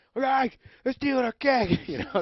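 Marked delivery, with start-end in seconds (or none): 0.8-1.8 put-on scream, much higher, louder. Retelling a drunken night, the speaker relives seeing kids steal their keg; retelling a scream. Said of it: "So I started screaming".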